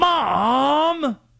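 very high-pitched, long drawn-out delivery. Acting out a player telling his mom to stop retweeting. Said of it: "What do you think that conversation's like?".

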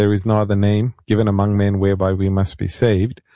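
ordinary talk, nothing marked

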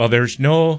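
bad put-on Irish accent. Quoting a CNN reporter's words: terrible Irish accent as Donie O'Sullivan. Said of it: "That's a terrible accent".

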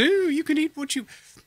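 very high, magical fairy voice. Voicing an imagined calorie fairy who says you can eat anything: Wizard of Oz fairy voice. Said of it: "I sound a little bit like the Wizard of Oz".

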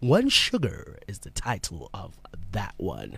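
low, slow radio announcer voice. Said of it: "that back announced that way".

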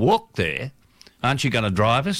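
ordinary talk

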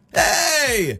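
happy, cheerful yell. Showing what a happy yell sounds like: happy yell. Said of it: "'Cause it can be a happy yell".

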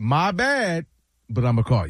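usual speaking voice

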